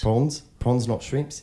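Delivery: New Zealand accent. Asked to show an Australian accent, slipping into a New Zealand accent. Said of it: "I'm doing more of a New Zealand".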